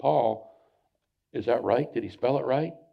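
whispered voice. Retelling a question to a friend while the teacher talks: imitating own past whisper. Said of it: "So I start whispering".

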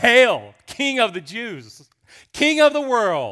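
loud, swooping jeer dripping with scorn. Retelling how they mocked him in the robe, acting out contemptuous mockery. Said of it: "Mockery, dripping with contempt".

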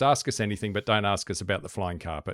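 ordinary talk

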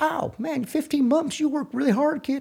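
put-on raspy Texas drawl. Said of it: "he's got that raspy Texas voice".

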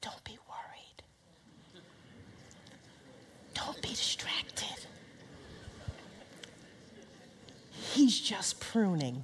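soft, whispered, reassuring tone. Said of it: "You're gonna whisper".

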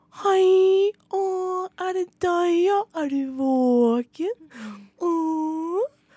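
put-on very high, slow, stretched-out baby talk. Retelling how a woman talked to a baby in a pram, baby talk voice. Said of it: "brukte sånn babyspråk".

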